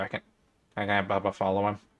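under-the-breath mutter. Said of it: "you just hear Bricks mutter to you".

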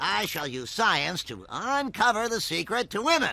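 quiet cartoon voice. Told he sounds like a cartoon character, speaking in a The Simpsons cartoon character voice. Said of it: "You sound like a dude from The Simpsons".

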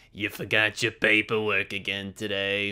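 low monster voice. On a podcast, answering a co-host in a Roz voice. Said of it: "I lean into Roz from Monsters".

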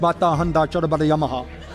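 mock babble, said really fast and high.

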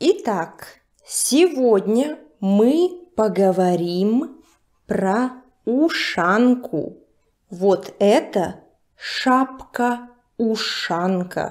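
deliberately slow, very slow pace. Teacher starting a lesson on the ushanka for learners, speaking very slowly. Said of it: "I'll be speaking very slowly".

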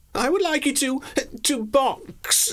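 very high, playful, taunting, teasing lilt. Gradlintle answers Gerald, who waits eagerly for his reply, teasing. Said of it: "Gradlintle teased".

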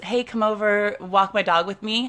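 ordinary talk

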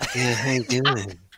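unsettling, creepy voice. Imitating a character greeting someone: creepy Daniel voice. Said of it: "I try to do the, uh, the creepy".

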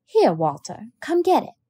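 impatience creeping into the voice. A woman speaks again to a boy who shook his head, impatience creeping into the voice. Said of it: "Impatience crept into Miss Caroline's voice".

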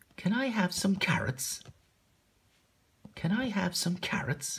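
very high-pitched character voice. Demonstrating how to read a story's dialogue aloud, a reader puts on Tim's voice. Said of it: "I know I have to put on Tim's voice".

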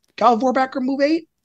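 question-like upward rise in pitch on 8. Discussing a charge bonus, with question mark inflection on Galvorbacker move. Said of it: "with a question mark inflection".

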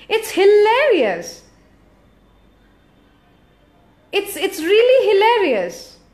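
laughing through the words. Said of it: "just laughed because it's funny".

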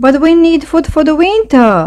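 crying out, very high-pitched. Little gray mouse argues with little brown mouse, crying out. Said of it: "cried little gray mouse, stamping his foot".

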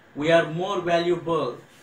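ordinary talk

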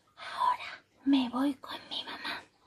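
hushed, confiding, secretive whisper. Narrator reads a boy at bedtime looking the pirate in the eyes, whispering. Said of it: "susurró".

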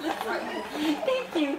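high-pitched laughing while crying.

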